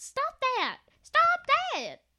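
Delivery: shrill, very high-pitched, slow, drawn-out yell. Telling a story about a woman running up to them, retelling a yell. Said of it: "She goes running up to them and yells".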